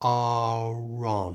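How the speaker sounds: slow, 'are on' joined, R moved forward. Showing a learner how a linked phrase sounds: said slowly. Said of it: "So slowly it sounds like this".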